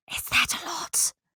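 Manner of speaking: hushed, whispered aside. Leaning into a companion as an offer is made, one character asks: whispering. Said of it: "she whispers".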